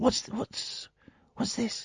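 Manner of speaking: soft, high-pitched whisper.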